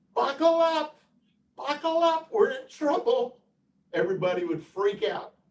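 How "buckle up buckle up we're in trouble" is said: very high-pitched, screeching squeal. Imagining a pilot in the same scenario speaking in a screeching, high-pitched voice. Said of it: "with a screeching, high-pitched voice".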